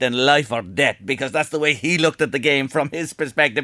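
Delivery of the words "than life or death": put-on Scottish accent, lower pitch. Quote the Liverpool manager's famous saying in Shankly's Scottish accent. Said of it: "he says in a Scottish accent".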